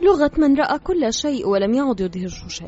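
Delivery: plain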